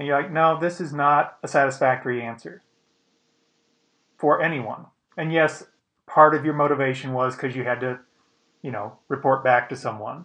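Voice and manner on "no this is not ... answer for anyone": ordinary talk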